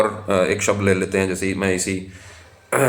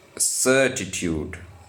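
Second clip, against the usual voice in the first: certitude with first syllable cer stressed; 3 dB quieter than usual. Explaining word stress in an English word: stress on first syllable of certitude. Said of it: "जोर जा रहा है स पे".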